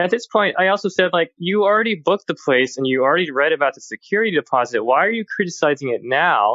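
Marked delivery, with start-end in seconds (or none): 1.4-6.6 higher-pitched, rude tone. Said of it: "I'm not saying it in this tone or this language".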